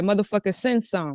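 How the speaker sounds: normal talking voice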